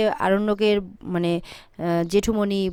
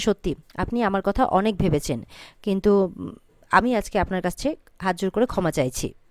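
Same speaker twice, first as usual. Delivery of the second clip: ordinary talk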